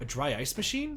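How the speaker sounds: ordinary delivery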